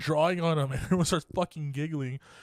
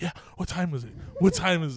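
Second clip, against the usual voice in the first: ordinary talk, nothing marked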